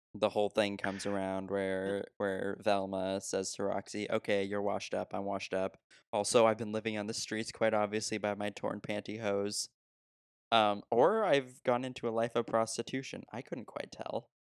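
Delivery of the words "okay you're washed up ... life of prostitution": plain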